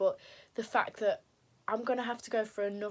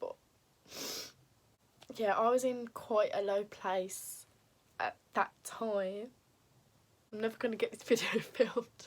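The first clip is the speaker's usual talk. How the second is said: tearful voice, crying while talking. Recalling a very low place in life, crying while talking. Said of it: "stop crying now".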